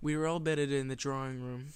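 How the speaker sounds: ordinary delivery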